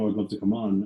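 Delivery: ordinary delivery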